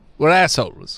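normal talking voice

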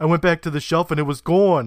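put-on loud New Jersey accent. Continuing Phil's line while recapping the scene, in Phil's New Jersey accent. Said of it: "jersey in me".

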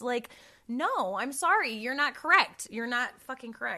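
loud, emphatic yelling right into the mic. Podcast host speaking into the mic during an episode, shouting. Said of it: "i feel like i'm yelling into my mic i'm sorry if that was loud".

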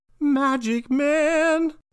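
put-on very high, loud voice, "man" stretched long. Doing a requested impression: Magic Man impression. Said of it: "do your impression".

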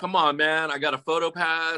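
play-acted frustrated yelling, calling out. Retelling trying to get in with a photo pass: imitating own past yelling. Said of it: "I'm sitting there yelling at the guy".

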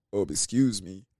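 very low, overly deep, put-on bass voice. Acting out a homeless man in a made-up scenario, in a deep homeless man voice. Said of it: "we can't get a homeless person that deep of a voice".

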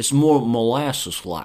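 put-on slow southern drawl.

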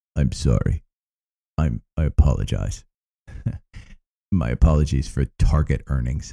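low, put-on grave and somber tone. Starting the Wednesday morning show the way he talked when Facebook came out, in a somber Jim Cramer voice. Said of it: "I'm starting in a somber voice".

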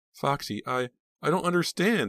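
weak, feeble, very high, slow voice. Pam replies to Rob as officers are about to lead him away, said weakly. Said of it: "Pam said weakly".

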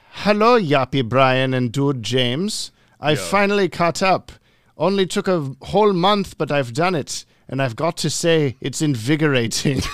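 loud, very bad put-on evil German doctor accent. Reading out a message on request, worst evil German doctor impression. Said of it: "say this in your worst evil German doctor impression".

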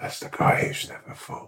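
very quiet, hushed whisper, close to the ear. Acting out telling a listener a secret in their ear: acting out a quiet whisper. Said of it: "I whisper in your ear really quietly and go".

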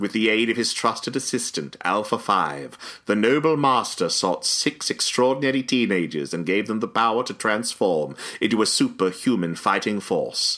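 put-on female movie narrator voice. Reading a movie's opening text aloud: imitating the narrating actress's voice. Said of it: "try to imitate the actress's voice who reads it".

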